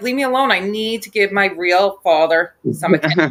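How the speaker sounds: ordinary talk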